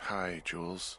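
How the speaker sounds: groggy, worn-out, tired, sleepy voice. Woken and told to pick up the radio, greeting Jules in a tired, sleepy voice. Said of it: "you sound tired".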